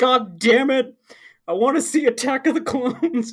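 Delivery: shrill, high, loud, furious tantrum yelling. Telling about a big guy upset that the bus was late, imitating someone yelling. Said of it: "Just like yelling".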